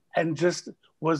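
ordinary talk, nothing marked

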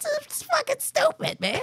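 high-pitched, exasperated, disbelieving squeal.

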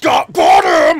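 high loud triumphant shout.

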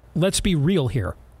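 usual speaking voice

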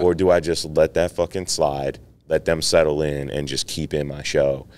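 usual speaking voice

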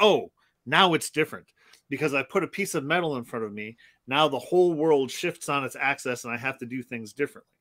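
plain

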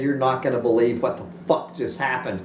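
normal talking voice

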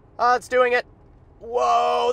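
nervous. Speaker riding as the Model X drives itself up a curvy road, nervous. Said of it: "I am really nervous right now".

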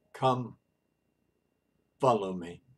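mild, very gentle voice. Hillel sees the narrator's agitation and speaks in a gentle, low voice. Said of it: "very gently and in a low voice".

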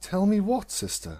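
even, unhurried, calm, very high-pitched voice. Celestia replies to her sister Luna, calm. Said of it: "Celestia said calmly".

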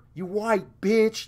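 screamed, abusive, high-pitched. Retelling what a man following them screamed at her. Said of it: "he's screaming at her".

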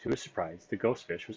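plain

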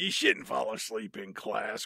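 low, creepy villain voice.

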